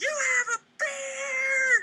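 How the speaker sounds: put-on very high, slow, top-of-lungs kid scream, beard drawn out. Retelling how a kid in a car window screamed at him: imitating a kid screaming. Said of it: "screams at the top of his lungs".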